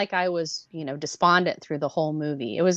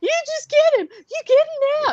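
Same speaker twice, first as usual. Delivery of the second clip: imitated tearful crying voice, much higher; 4 dB louder than usual. Recalling crying while watching Rocket go after someone, imitating tearful urging. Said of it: "I'm crying, going".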